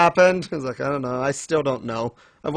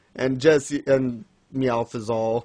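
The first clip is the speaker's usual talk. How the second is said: usual speaking voice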